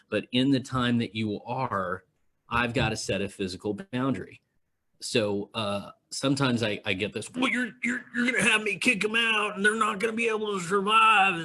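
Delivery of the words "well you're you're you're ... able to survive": very high mimicked voice with stumbling repeats. Speaker retells what someone tells them: Derek Talkington impression. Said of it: "that was my impression of Derek Talkington".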